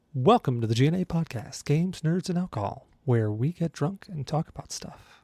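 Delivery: put-on customer-service voice. Host opens the podcast episode, welcoming listeners; customer service voice. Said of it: "I don't know why I'm talking in this voice. I just throw in my customer service voice".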